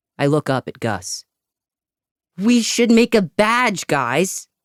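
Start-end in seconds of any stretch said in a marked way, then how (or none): 2.4-4.4 very high shout. Reading a story aloud, a boy in a tree proposing a badge: shouting. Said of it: "he shouts".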